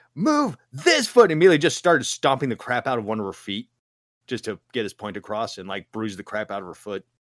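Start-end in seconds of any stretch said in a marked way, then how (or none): 0.2-1.3 put-on shrill, very high, furious scream. Retelling how a dance instructor screamed at a dancer: imitating someone screaming. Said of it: "started screaming".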